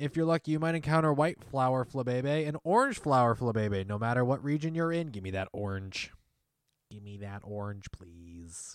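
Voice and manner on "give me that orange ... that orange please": monotone, flat, hushed machine-like robot voice. Discussing Flabébé flower colors, in a robot voice. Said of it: "I tried to go robot voice there".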